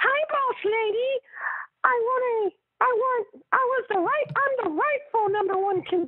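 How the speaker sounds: very high squeaky falsetto, swooping pitch. Speaker retelling AJ skipping around the ring, doing an AJ impression in falsetto. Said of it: "I'm trying not to speak like falsetto".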